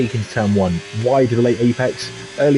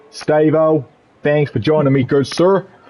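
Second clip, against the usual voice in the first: effortful put-on American accent; 3 semitones higher than usual. Opening a race broadcast as a joke: put-on american accent. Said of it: "go back into my American accent".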